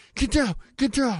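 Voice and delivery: loud shout. Imagining a SWAT team bursting in: imitating a SWAT team shouting. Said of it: "They swat team me".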